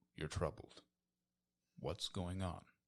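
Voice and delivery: sweet, high-pitched character voice. Voicing Cavagal with a hand on Finn's shoulder, compassionate Cavagal voice. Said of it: "most endearing and um, compassionate, I guess, voice".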